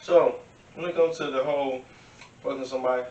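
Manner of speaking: speech pushed around a mouthful of candy. Talking with friends about relationships, talking with candy in mouth. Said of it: "I got candy in my mouth".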